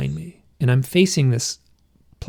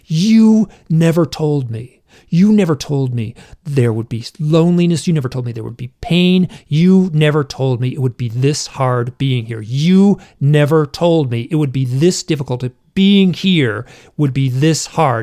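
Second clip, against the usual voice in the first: mock-angry tearful outburst with sobbing; 5 dB louder than usual. Recounting swearing at him in an emotional moment, retelling an angry sobbing outburst. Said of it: "so emotional and so angry".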